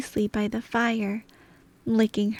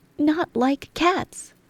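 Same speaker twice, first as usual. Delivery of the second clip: shrill, passionate, impassioned mouse voice; 5 semitones higher than usual. Narrator reads the mouse's reply to an apology: shrill, passionate voice. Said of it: "cried the mouse in a shrill, passionate voice".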